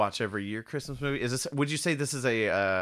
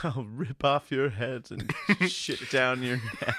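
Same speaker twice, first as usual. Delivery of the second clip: mock sobbing, savage, tearful crying voice; 2 semitones higher than usual. Retelling a movie character's threat: imitating someone crying. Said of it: "she's, like, crying".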